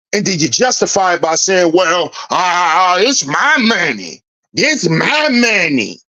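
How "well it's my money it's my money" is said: very slow, drawn-out, mocking delivery. Mocking a father justifying his spending: mocking imitation of a man justifying himself. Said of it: "Sounded like a ho-ho".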